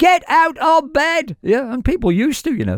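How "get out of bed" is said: very slow, high, commanding radio-style shout. A breakfast show host recalls what they used to call out on air, re-enacting a shout. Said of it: "in those days when I used to shout".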